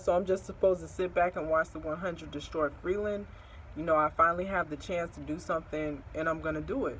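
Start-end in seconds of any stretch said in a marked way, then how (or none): none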